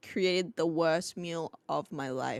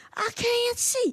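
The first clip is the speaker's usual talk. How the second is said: very high-pitched shrieking, screaming cry; 4 dB louder than usual. Retelling a brother swinging a pillow in the dark: imitating someone screaming.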